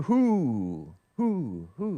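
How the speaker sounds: stress on the word "who". Reading a chat message aloud to viewers: stress on who. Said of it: "I'm emphasizing the who".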